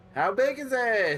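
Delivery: very high, drawn-out yell carrying across a distance. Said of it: "He yells".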